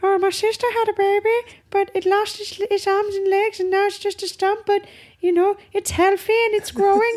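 very high-pitched cartoonish critter voice. Doing an impression after being asked: Shark Tale prawn impression. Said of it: "What's your impression?".

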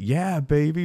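all-out high yelling. Retelling hearing a jumper come down: imitating Austin Powers yelling. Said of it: "Like Austin Powers".

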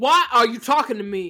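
loud, irritated, annoyed, unwelcoming tone. Acting out how someone reacts at work, impression of Stanley. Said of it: "That's my impression of Stanley".

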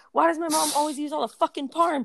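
acted-out, furious, high-pitched angry outburst. Speaker reads aloud a text she once wrote, retelling an all-caps shout. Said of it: "And in caps".

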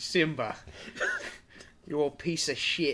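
slow, drawn-out, savouring taunting tone. Imitating Scar saying a line, sounding like Steve Irwin. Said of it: "you sound like Steve Irwin".

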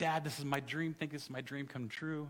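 put-on tearful voice. Retelling what his daughter said to him, imitating someone tearful. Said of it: "and she's in tears".

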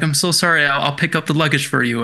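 plain

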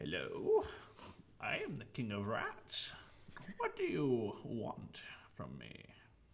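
very raspy, rasping rat-king growl. Game master voices a cloaked figure greeting the players, very raspy voice. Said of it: "you hear this very rapsy voice".

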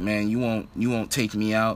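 ordinary talk

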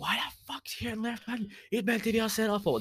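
put-on furious outburst, pitched very high. Retelling a brother's reaction to a substitution: imitating a raging brother. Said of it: "just raging".

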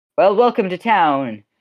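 high, loud, called-out yell. Voicing the innkeeper greeting newcomers across the inn: yelling out. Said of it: "yell out".

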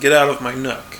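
ordinary delivery

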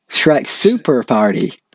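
over-the-top, exaggerated, cringy fake American accent. Trading joke titles back and forth, in an exaggerated cringy American accent. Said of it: "What accent's that? American. ... You're meant to be cringy American".

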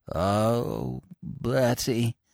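low, choked, strangled voice. Narrator reads a young man's words as his face suddenly changes, in a strangled voice. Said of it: "in a strangled sort of voice".

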